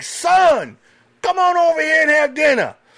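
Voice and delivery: very loud, very high-pitched holler. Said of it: "yells across the truck stop".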